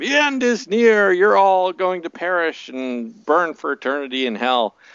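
mock, high, screeching, screaming cry. Retelling a woman heard screaming on NPR: imitating a woman screaming. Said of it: "this woman screaming".

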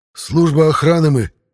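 shaky, quavering, trembling, high-pitched. A kneeling guard answers his captor's question, in a trembling voice. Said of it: "дрожащим голосом отозвался боец".

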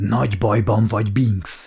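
hoarse, raspy whisper. A narrator reads one character confronting another, in a hoarse whisper. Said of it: "Suttogta rekedten".

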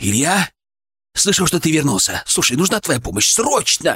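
ordinary delivery

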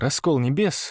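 ordinary talk

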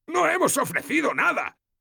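very high, ragged, rough yell. A narrator voices a captain protesting to the speaker, shouting. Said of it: "gritó el otro capitán".

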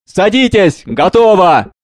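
exultant, triumphant call. The chauffeur calls out to Maurice and his father: triumphant and loud. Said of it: "Шофер торжествующе громко".

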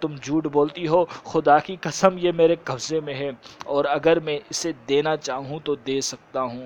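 ordinary talk, nothing marked

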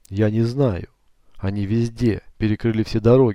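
ordinary delivery

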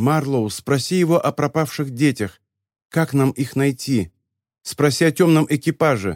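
plain

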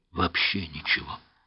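ordinary delivery

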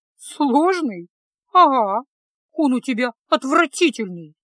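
loud, said through a snort. Fesa retorts to Kyle, snorting. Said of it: "фыркнула Феса".

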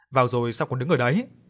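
ordinary delivery

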